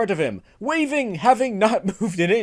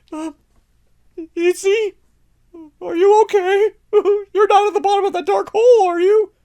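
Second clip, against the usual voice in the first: very high, frightened, terrified calling out; 10 semitones higher, 6 dB louder than usual. Reading a story, Hitch calls to Itzy down a dark hole, terrified.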